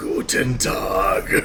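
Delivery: dark, angry voice. Imagining how a Germany character would greet: dark angry voice. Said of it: "it's like a dark voice".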